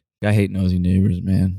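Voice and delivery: deep low voice. Speaker retells what he said as they drove away: deep low voice. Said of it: "I like this deep, deep, like low voice".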